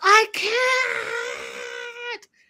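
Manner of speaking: very high, raw guttural scream. Recounting how Jenny freaked out: retelling Jenny's guttural scream. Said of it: "It was like a very guttural scream".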